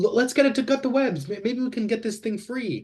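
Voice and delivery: very high shout, as if calling across a distance. Shouting to an ally in a role-play scene: yelling in character. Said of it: "I'm gonna yell".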